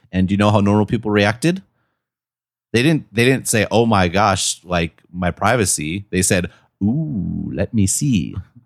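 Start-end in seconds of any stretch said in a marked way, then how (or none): 6.9-8.4 very slow, leering, creepy voice. Acting out how ordinary people reacted to leaked photos, in a mock-creepy voice. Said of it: "You even said that in an appropriately creepy voice".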